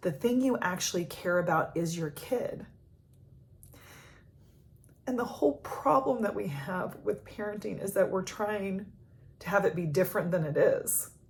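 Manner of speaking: tearful crying voice, speaking through tears. Speaker talking about a coaching client and parenting, crying. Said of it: "I'm crying right now".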